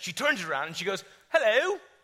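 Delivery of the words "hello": put-on high-pitched, loud, with British accent. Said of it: "She's British".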